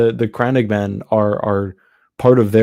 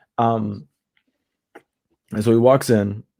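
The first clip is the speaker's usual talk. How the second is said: ordinary talk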